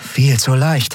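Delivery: offhand murmur. After the guards are shot down, a fighter shoulders her weapon, murmured. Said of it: "murmelte Andriel".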